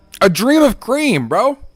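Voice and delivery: chewing mid-line, very high, loud, mouth full. Greeting someone nicknamed Cream Dream while eating goldfish crackers: talking with mouth full. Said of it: "I was I was chewing on some goldfish here".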